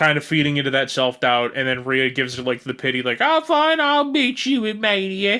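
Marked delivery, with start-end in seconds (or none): 3.2-5.4 bad Australian accent, very high, very drawn out. Acting out a wrestler's pitying line: bad Australian accent. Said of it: "You were not doing an Australian accent at all?".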